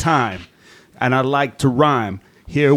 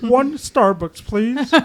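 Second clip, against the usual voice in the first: very high, pitched-way-up cartoon alien voice; 10 semitones higher than usual. Imagining a cartoon character out in the real world at Starbucks, in a Marvin the Martian voice. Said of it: "imagine Marvin the Martian out there".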